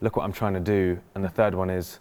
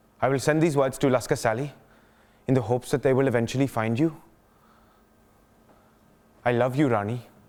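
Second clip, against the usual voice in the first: put-on Bengali accent, higher; 5 semitones higher than usual. Performing a letter written in English, with an Indian accent. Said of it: "so will be performed with an accent".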